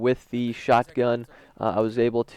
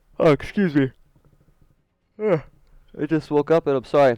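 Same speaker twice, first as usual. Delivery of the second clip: talking through a yawn, higher; 3 semitones higher, 3 dB louder than usual. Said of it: "I'm yawning all over the mic".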